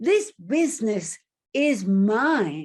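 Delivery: loud, slow, put-on passionate declaration, "mine" drawn out. Retelling what a shop owner said very seriously: imitating someone speaking with passion. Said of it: "he said it with such passion".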